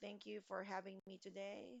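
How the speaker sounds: flat robotic voice. Giving advice about tone in class, the speaker demonstrates a robot monotone voice. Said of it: "Are you like a robot when you're talking".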